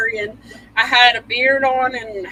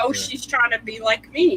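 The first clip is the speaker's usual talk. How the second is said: plain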